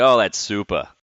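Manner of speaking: put-on Boston accent, said loudly. Imitating a late father's stock phrase: Boston accent. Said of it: "he had the Boston accent".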